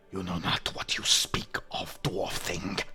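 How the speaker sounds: creature voice, hissed whisper under the breath. A creature at a gate addressing a dwarf, hissing under its breath. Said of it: "it hisses under its breath".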